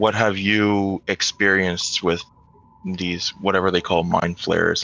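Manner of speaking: hushed, low-key tone. Asking a stranger in character about mind flayers: hushed tone. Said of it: "I'm saying in a hushed tone".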